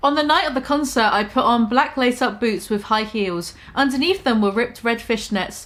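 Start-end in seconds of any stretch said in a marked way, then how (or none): none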